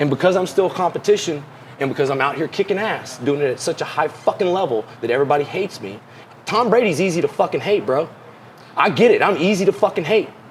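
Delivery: heated, fired-up, worked-up rant. Mid-rant, the speaker is getting a little heated. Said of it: "I'm getting a little heated".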